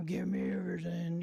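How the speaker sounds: put-on gruff robber voice. Retelling a gunman's demand during a robbery, in a gruff voice. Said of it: "in a real gruff voice".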